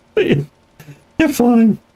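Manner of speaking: squeaky, very high, swooping cartoon mouse voice. Right after a crazy frog appears on screen, a Mickey Mouse voice. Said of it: "I just did Mickey Mouse voice".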